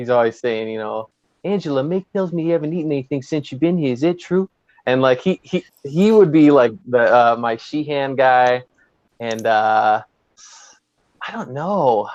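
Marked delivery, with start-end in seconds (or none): 1.5-4.5 put-on thick, laid-on New Jersey accent, spoken quickly. Quoting the camp counselor from Sleepaway Camp, in Paul D'Angelo's New Jersey accent. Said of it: "he's got the thick New Jersey accent".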